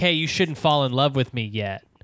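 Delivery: ordinary delivery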